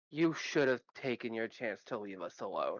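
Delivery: threatening whisper. Voicing a character who threatens a gnome, whispering in character. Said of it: "is going to whisper in Orin".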